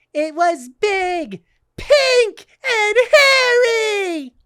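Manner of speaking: very high, loud, slow cartoon squeak, "hairy" stretched. Doing an impression after being asked to do SpongeBob: SpongeBob voice. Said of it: "Do SpongeBob right now".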